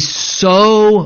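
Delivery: leaning hard on "so much". Teaching a bible passage to listeners, stressing "so much". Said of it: "and I emphasize the word so much".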